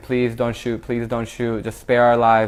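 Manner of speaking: ordinary delivery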